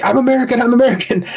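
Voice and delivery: put-on repeated high, insistent shouting. Retelling a downed pilot yelling at locals: imitating someone yelling. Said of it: "yelling at him the whole time".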